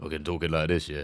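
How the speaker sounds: very deep, demon-like voice. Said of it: "Hella deep voice".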